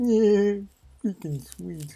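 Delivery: very high-pitched cartoon-character voice. Comparing his cartoon impressions, the speaker shows his Peter impression. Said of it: "Whereas Peter is like".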